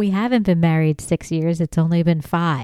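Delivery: plain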